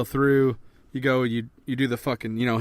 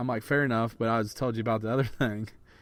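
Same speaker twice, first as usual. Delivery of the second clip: ordinary talk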